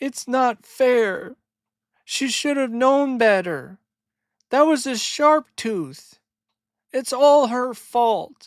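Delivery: very high, weepy, tearful sobbing, complaining voice. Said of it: "And Littlefoot is crying".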